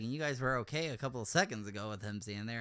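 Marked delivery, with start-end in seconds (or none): none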